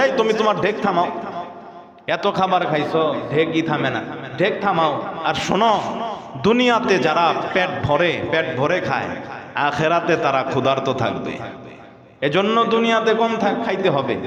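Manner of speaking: plain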